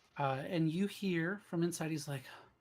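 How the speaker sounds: normal talking voice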